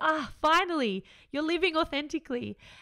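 loud, relieved sighing voice. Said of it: "sighs and it goes".

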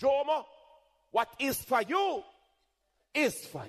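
put-on very high-pitched Jamaican accent. Quoting a saying of the speaker's mother, in her jamaican accent. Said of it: "as my mother would say in her Jamaican accent".

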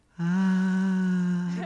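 very high, light, soft, drawn-out scream. Demonstrating the soft scream stress-relief method: soft, light scream. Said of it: "sort of like".

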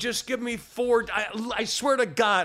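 slow, high, threatening, each word spelled out deliberately.

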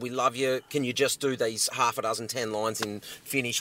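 ordinary talk, nothing marked

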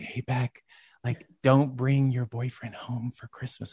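soft, quiet whisper. Retelling a phone call from mom: imitating mom whispering. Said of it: "whispering in the phone".

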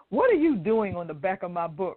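ordinary talk, nothing marked

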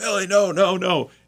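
shrill, very high, stretched-out scream. Recalling the dog getting sprayed a fourth time, retelling a scream. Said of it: "and I'm screaming".

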